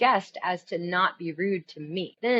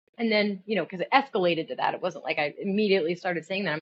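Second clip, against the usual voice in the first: usual speaking voice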